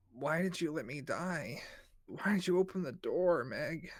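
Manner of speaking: slow, drawn-out, accusing ghostly voice. Voicing a creature wearing a dead friend's face, asking why: accusing voice. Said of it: "Gita's face appears in those holes and is like".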